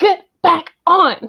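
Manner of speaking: shouting. Narrating a scene, the speaker voices someone yelling over the comms. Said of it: "There's yelling over the comms".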